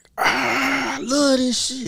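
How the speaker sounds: very high, drawn-out screaming with long ah. Retelling someone walking into a six am practice: imitating someone screaming. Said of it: "start screaming".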